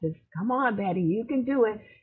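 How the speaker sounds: mock high, encouraging cheering call. Speaker recalls her mentor at an event, retelling a mentor's shouted encouragement. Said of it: "she was just shouting and just encouraging me".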